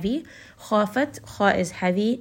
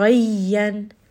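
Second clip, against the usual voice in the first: doubled yy in ghayyan held hard, stressed, raised; 4 dB louder than usual. Arabic pronunciation lesson, adding more shadda: stressed doubled y in ghayyan. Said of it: "apply a little bit of more shadda. Raise the voice a little bit. Give a little bit of additional nabr here".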